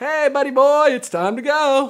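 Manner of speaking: very high, loud, happiest, goofiest holler. Retelling a dad yelling across the room at a middle school dance, mock happy, goofy yell. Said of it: "yells across the room in the happiest, goofiest voice possible".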